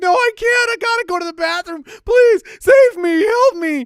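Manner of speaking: very high, loud, desperate pleading crying. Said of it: "he's, like, crying".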